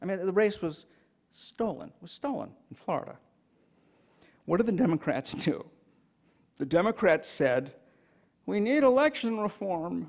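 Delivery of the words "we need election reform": weak, high, pitiful, pleading whine, acted out. Mocking what the Democrats said after the stolen race: mock-pathetic whine. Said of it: "Did I capture the pathetic".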